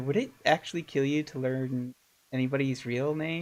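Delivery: whispered voice. Playing a character, looking over at another character and whispering. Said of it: "I just sort of whisper".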